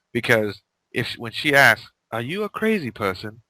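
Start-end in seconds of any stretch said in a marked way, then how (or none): 2.1-3.3 clumsy, bad, fake put-on British accent. Quoting her question back in a bad british accent. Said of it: "in my bad British accent".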